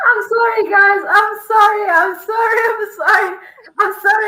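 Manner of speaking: high, tearful voice, words coming through crying. Speaker apologizes to viewers on a livestream, crying. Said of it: "I'm like crying on this live".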